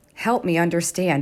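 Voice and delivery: ordinary talk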